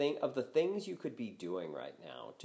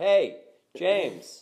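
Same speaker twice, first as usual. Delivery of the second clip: shouting loudly. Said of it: "C J McCollum yelling over".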